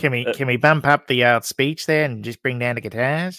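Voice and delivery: poor put-on New Zealand accent. Retelling what a man said, to a co-speaker: bad Kiwi accent. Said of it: "That's a terrible Kiwi accent".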